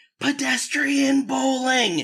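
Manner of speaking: very high, projected, acted-out scream. Recalling what a guy screamed out on an incline, retelling a scream. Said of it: "he screamed out".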